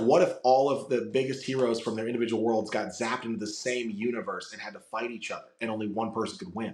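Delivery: ordinary delivery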